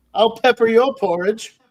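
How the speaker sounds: put-on old-timey boxer voice, pitched way up very high. Quoting trash talk from a sketch: Conan O'Brien old-timey boxer voice. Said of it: "a Conan O'Brien S N L sketch where he does that, where he does that old-timey boxing".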